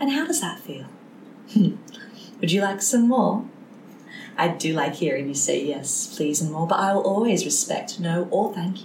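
nice, gentle, kindly kindergarten teacher voice. Talking to a child during play, in a gentle kindergarten teacher voice. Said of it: "with my nice kindergarten teacher voice on".

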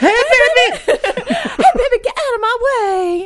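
put-on hint of southern accent, very high, slow, drawn out. In the scene, Sexy Barney tells a car that cut in front of him to move. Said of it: "he got a little bit southern there".

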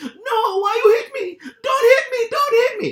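put-on thick Italian accent, very high and very loud. Retelling a street fight, quoting the hit man: imitating a thick Italian accent. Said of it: "with a really thick accent, and that was what he sounded like".

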